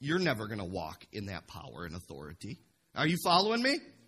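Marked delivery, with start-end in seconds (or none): 0.0-2.6 haughty, snooty, dismissive, very low and soft. Speaker quotes followers of a dead religion, mimicking a snooty tone. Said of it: "they say it in kind of a snooty way".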